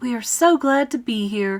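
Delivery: ordinary delivery, nothing marked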